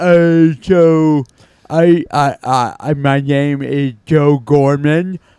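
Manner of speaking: loud, very slow, jutting-jaw underbite put-on voice. Showing how to do a character voice: put-on deep voice with underbite. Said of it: "get an underbite going, and just talk in a deep voice".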